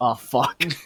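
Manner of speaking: sudden, sinking, dismayed cursing. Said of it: "he's like".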